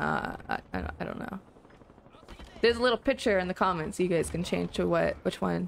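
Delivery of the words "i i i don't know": breathy, soft, slow, halting stammer. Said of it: "And I'm like".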